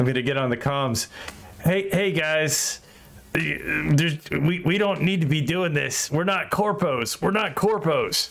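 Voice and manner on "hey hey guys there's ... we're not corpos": voice sounding as if heard over radio. In a role-play scene, a character shouts to the guys on the comms. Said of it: "shouting on the private line".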